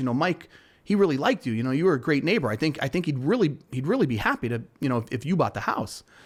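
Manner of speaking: plain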